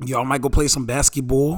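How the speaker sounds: put-on New York street talk accent. Speaker, asked to hold a conversation like a yo son, in a put-on 'yo son' accent. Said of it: "Are you from Maryland?".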